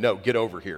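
completely serious, no joking. Retelling the reply to someone who jokingly answered, retelling a dead-serious reply. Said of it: "it was no ha-ha, no playing".

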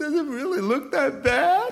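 very high, loud, weepy tearful crying wail. Quoting a woman asking about her bad haircut: imitating someone crying. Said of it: "And she's crying and she says".

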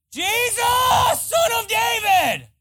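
very high-pitched, very slow, drawn-out scream. Telling the story of blind Bartimaeus to a crowd, acting out his cry: retelling a scream. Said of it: "He's screaming".

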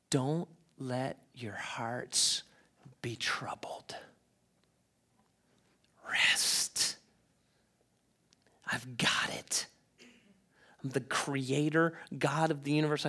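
slow, drawn-out, barely audible whisper. Quoting Jesus speaking to the listeners this morning: put-on whisper as Jesus. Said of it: "he whispers to you this morning".

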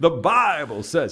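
put-on rich North Carolina accent, loud. Imitating an evangelist's repeated sermon phrase: Billy Graham North Carolina accent. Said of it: "he has it in that rich North Carolina accent".

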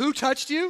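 mocking, dry, sarcastic disbelief. Retelling the disciples' reply to Jesus' question: imitating sarcastic disciples.

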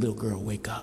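very soft, very quiet, hushed, still small voice. Imagining him lying beside a little girl and speaking to her, still small voice. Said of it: "in a still small voice".

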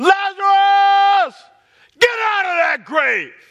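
very loud, high-pitched, drawn-out, ringing shout. Retelling a command called to the dead man: imitating a loud call. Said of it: "He said it in a loud voice".

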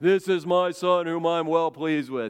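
epic, booming, godlike movie announcer voice. Imagining a voice from heaven as the dove comes down, Charlton Heston-like voice. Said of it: "this Charlton Heston-like voice comes out of heaven".

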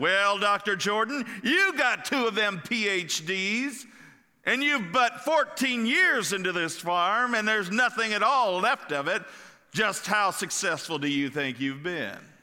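haughty, condescending voice. Storyteller voices a reporter prodding a farm owner about his success: retelling a haughty voice. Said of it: "the reporter in a haughty voice said".

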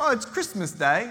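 put-on half Australian, half British accent. Retelling a christmas story, the speaker voices the boy: half australian, half british accent. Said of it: "I got like a half Australian, half British accent".

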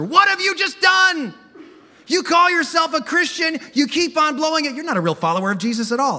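very high, accusing voice. Preaching about temptation, voicing the accuser who condemns believers: voicing Satan the accuser. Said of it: "Ever hear that voice? That's the accuser".

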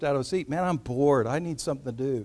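ordinary delivery

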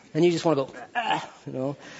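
ordinary talk

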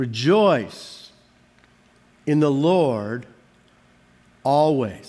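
very slow, halting word-by-word reading, "Lord" stretched. Speaker rereading a Bible verse aloud to listeners, reading it really slowly. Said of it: "Read it really slow".

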